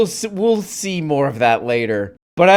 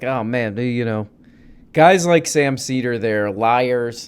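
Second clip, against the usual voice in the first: ordinary delivery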